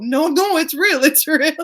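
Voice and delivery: high, fake Russian accent. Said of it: "That's a fake Russian accent".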